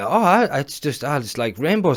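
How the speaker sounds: half-hearted, feeble, lazy sarcastic put-on. Mimicking someone's satirical skit about rainbows: imitating low-level sarcasm. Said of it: "really shit low-level sarcasm".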